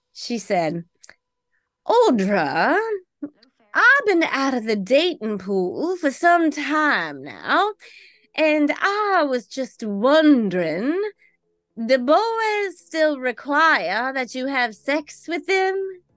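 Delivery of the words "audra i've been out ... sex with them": put-on high-pitched Georgia Southern accent. Retelling what she said alone in the kitchen, in a Scarlett O'Hara Georgian accent. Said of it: "in her Scarlett O'Hara kind of sounding a Georgian accent".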